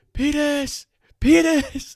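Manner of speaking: very high, very loud, shrill, immature screaming yell. Recalling a teenager pounding on doors during Ding Dong Ditch, retelling a scream. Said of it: "aggressively like pounding on these doors and screaming like".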